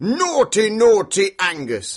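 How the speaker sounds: high, loud scolding giant shout. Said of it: "Can you go, and wag your finger".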